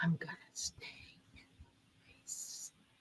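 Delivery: very quiet, creepy, barely voiced whisper. Imitating Joe saying he is not dropping out: whispered impression of Joe. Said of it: "he was whispering".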